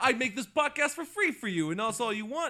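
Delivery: odd fake Brooklyn accent, very loud and high. Podcast host tells listeners the show is free, in an odd put-on accent. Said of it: "I don't know what that accent was".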